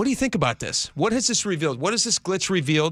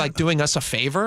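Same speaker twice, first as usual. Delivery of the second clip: ordinary talk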